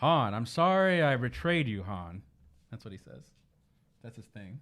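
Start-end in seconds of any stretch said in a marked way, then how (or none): 0.0-2.2 suave, smooth voice, very slow, raised. Describing the smoothest guy in the galaxy, a podcaster does a Lando impression. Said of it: "That was my impression".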